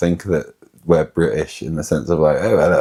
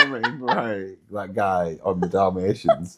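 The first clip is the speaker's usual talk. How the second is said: normal talking voice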